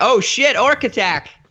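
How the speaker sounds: high, loud panicked yell, pitched way up. Voicing a frightened character who spots an orc: panicked NPC shout. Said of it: "he starts to panic and he's like".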